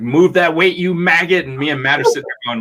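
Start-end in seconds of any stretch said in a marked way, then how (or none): 0.0-1.5 pitched-up loud screaming. Retelling a gym partner screaming during a workout: imitating someone screaming. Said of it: "screaming at each other".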